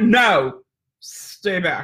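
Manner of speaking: irritated, pissy delivery. Describing keeping her dog behind her when others approach, pissy voice. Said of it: "And I get my pissy voice".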